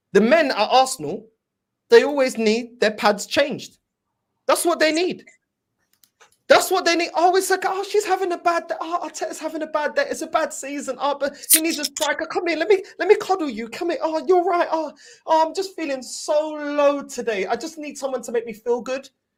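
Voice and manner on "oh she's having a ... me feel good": sneering, derisive, feminine put-on voice. Mocking the men at Arsenal by imitating them: mocking imitation of men sounding like women. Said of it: "That's how they sound like women".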